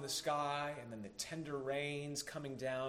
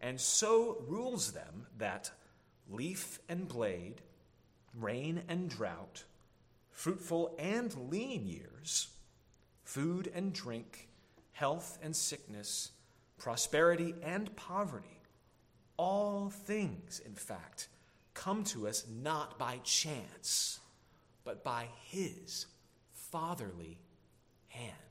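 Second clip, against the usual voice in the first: slow, careful reading-aloud delivery. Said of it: "I'll try to read it slow".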